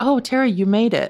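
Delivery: mock cool, lightly disdainful. Retelling other parents greeting her at the field: imitating a disdainful parent. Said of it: "just the little disdain in their voice".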